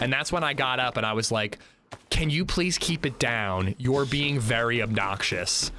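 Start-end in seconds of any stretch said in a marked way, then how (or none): 2.1-5.7 firm, stern, fatherly scolding tone. Speaker retells asking noisy moviegoers to quiet down, total dad voice. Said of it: "I said it like total dad voice".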